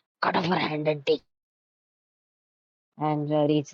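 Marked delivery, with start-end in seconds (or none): 0.2-1.2 hushed whisper, lower pitch. Voicing a character who whispers a suggestion to another: whispering. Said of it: "Riri just whispers to me".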